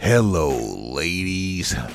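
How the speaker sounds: creepy, very deep, low voice. Aside greeting the ladies while ranking WrestleMania events: creepy voice. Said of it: "Now don't put that creepy voice with it".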